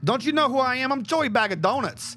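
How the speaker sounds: put-on New Jersey accent. Recalling a line from a game being mocked, in a put-on new jersey accent. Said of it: "let me try to get back a fucking Jersey voice".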